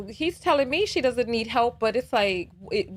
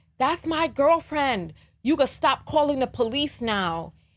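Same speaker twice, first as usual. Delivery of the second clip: toned-down, mild yelling voice; 3 semitones higher than usual. Retelling how the man screamed about calling the police: imitating a man screaming. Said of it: "he screams out at me".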